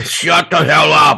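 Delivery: horrible hairy-beast voice, slow, rough, loud bellow. Retelling what a Bigfoot yells at the juveniles: horrible Bigfoot impersonation yelling. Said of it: "Each time they say it gets better".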